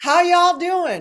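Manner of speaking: high-pitched, put-on Southern US accent. Recalling a neighbor introducing herself: imitating a Southern accent. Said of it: "come up with a Southern accent".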